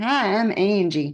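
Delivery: sweet, sugary little Southern voice. Retelling a woman waltzing into the speaker's class, imitating Angie's sweet Southern voice. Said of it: "in her sweet little Southern voice".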